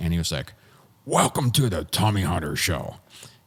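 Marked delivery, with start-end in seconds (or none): 1.0-3.0 mock irritated, sour, angry, mad tone. Retelling how George walked through the dressing room all mad: imitating George's angry greeting. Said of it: "walked through all mad".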